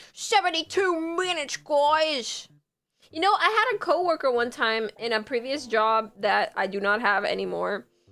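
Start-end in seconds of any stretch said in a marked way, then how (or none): 0.2-2.5 pitched-up, still-tentative put-on Brooklyn accent. Speaker practicing an accent while telling the group the time left, practicing a brooklyn accent. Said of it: "I have to practice it".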